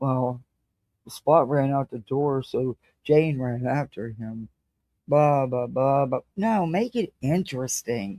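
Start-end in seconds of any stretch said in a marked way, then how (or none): 1.1-6.2 flat, expressionless, droning monotone. Showing how a dull reader reads a story to kids: flat monotone reading. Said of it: "somebody in a monotone voice just reads".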